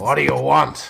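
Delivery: irritated, rough, creaky snarl. Narrator voicing an interrupted man's reply to the players, snarling. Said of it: "looks at you and snarls and says".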